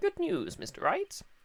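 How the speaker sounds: very high, old cartoon professor voice. Voicing the judge, speaking to Mister Wright; Futurama professor voice. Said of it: "my um judge voice is basically my attempt at the uh, professor from Futurama".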